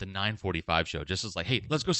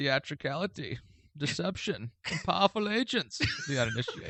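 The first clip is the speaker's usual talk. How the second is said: slow, pitched-up villain voice leaning on each word; 7 semitones higher, 4 dB quieter than usual. Doing a Bane impression in a contest: Bane impression. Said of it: "let's do a Bane off".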